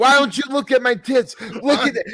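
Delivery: mock yelling. Retelling a movie scene where a character berates people: imitating someone yelling. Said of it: "she's just yelling at them like".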